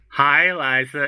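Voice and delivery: mock old person voice. Doing a bit for the group, greeting Liza in an old Andy Dick voice. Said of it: "I'm trying to do like the Andy Dick with an old voice".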